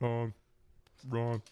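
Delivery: put-on, brash politician voice. Doing an impression for friends on how Donald Trump says wrong: Donald Trump impression. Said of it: "How does Donald Trump".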